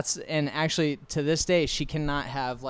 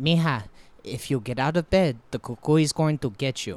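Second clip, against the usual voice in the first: put-on old woman voice with Mexican accent; 5 dB louder than usual. Retelling what the speaker's mom's grandmother used to say, in an old Mexican lady accent. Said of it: "Why do you have to do the accent?".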